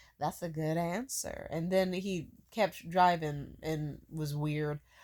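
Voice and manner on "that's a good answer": put-on sinister, unsettling edge. Retelling what a driver said after laughing: imitating a sinister tone. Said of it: "he laughed, like, kinda sinister".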